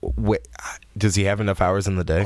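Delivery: ordinary delivery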